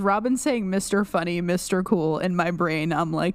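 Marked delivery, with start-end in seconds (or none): none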